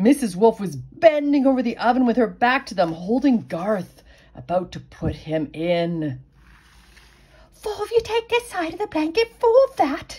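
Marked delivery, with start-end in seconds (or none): 7.5-10.2 very high, hissed words. Sorrel instructs the piglets from outside the kitchen: hissed. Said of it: "hissed Sorrel".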